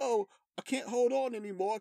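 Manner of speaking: put-on British accent. Retelling a character's line from a scene with Khonshu, in a British accent impression. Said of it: "is that your British accent?".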